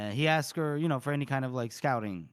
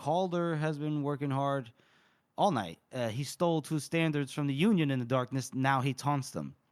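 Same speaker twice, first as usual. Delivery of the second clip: ordinary delivery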